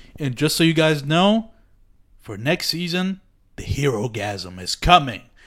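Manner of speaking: play-acted, hyped, over-the-top grand dramatic delivery. Retelling a Q and A announcement: imitating a hyped dramatic announcement. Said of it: "Almost like this is the craziest shit in the fucking world".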